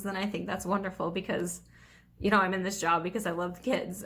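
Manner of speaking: choked-up, breaking voice, emotion catching in throat. Talking about working with school kids she helps, getting choked up. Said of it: "sorry, I'm getting choked up".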